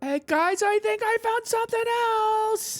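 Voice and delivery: very high, rising yell carrying across distance. Voicing a character who calls over to the group: character yelling over. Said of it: "She yells over".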